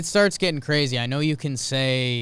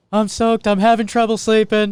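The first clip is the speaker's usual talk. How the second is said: very high-pitched, very loud voice; 9 semitones higher, 8 dB louder than usual. Trying out a voice that the listener hears as Seinfeld again, high-pitched Seinfeld voice. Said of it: "High pitch".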